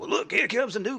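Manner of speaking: very loud, very high, rasping gravelly character voice. Retelling how a man greeted new arrivals, imitating Love Kills' gravelly voice. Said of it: "This is his voice".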